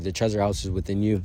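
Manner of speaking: usual speaking voice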